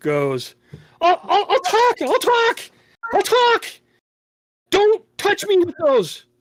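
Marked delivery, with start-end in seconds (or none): 1.0-6.2 very high, freaking-out, repeated pleading, stammering. In a narrated scene, the guy in the middle starts begging: freaking out. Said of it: "The guy in the middle starts freaking out".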